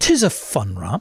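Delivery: put-on, very proper British accent. Asked to say the line again in a proper british accent. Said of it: "Please insert [name]'s proper British accent".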